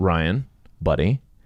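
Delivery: calm, friendly, soothing inner-wisdom voice, like a buddy. Retelling self-talk after a bad night's sleep: Mister Rogers voice. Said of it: "I got this Mister Rogers voice that kinda talks to me".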